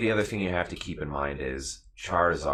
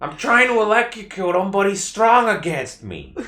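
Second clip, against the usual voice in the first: put-on very loud, high-pitched yell in New York accent; 9 dB louder than usual. Joining in doing a mediocre Danny DeVito impression: mediocre Danny DeVito impression. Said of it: "Our impressions just turn into standard New Yorker".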